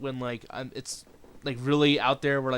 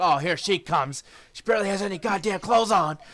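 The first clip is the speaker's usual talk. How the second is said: put-on commentator voice, higher and louder; 6 semitones higher, 4 dB louder than usual. Retelling a wrestling show entrance, imitating Jim Ross. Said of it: "Jim Ross is like".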